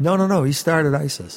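ordinary talk

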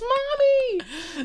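mock little girl's shriek, very high and drawn-out. Retelling a scene where a little girl runs off: imitating a girl screaming. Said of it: "she screams and goes".

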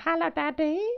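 put-on very high, freaky little baby-doll voice. Describing a game's little baby ghost that walks around: imitating a freaky baby doll. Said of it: "really freaky, and he's like".

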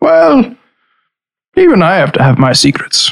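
character voice with wide pitch swings. Answering someone who wished they had been told sooner, in Aberstall's voice. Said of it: "I'm going to do this in Aberstall's voice".

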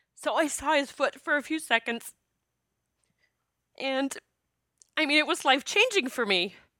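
tearful, crying voice. Recalling a life-changing experience to listeners, crying while talking. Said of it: "And I'm crying now".

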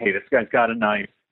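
normal talking voice

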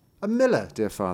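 ordinary delivery

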